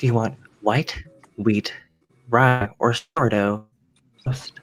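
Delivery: flat, robotic, mechanical, machine-like service voice. Retelling a lady at a restaurant asking what toast they want, imitating her robotic voice. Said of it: "the lady has the most robotic voice".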